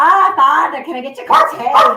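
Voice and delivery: loud, slow, fake Irish brogue. Showing an irish accent after being asked to: put-on irish accent. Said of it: "Cheryl's Irish accent".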